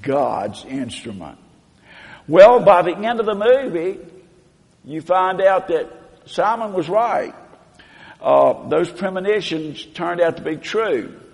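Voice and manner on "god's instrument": low, heavily sarcastic, scornful tone. Retelling a movie scene, the minister speaking as Simon leaves, imitating the minister's sarcasm. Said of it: "the minister kind of says very sarcastically".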